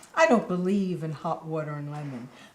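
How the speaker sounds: low, snide, snarky tone. Retelling a call with a longtime friend, the speaker voices the friend, imitating a snarky voice. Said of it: "She to me in a snarky voice".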